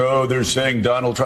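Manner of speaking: put-on laughing. Speaker mimicking the candidate's apologists writing an op-ed: mock laughing.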